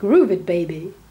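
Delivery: rough, put-on American accent. Host redoes a line for American listeners, attempted American accent. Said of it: "That's supposed to be an American".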